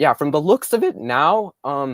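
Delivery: loud voice crack, breaking mid-phrase. Talking to viewers about a production, voice cracking. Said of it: "sorry for the voice crack".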